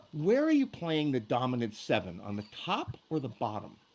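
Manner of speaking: low-key, hushed, soft-spoken, quiet voice. Retelling what he asked Ed during a rehearsal: quiet voice. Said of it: "in a quiet voice".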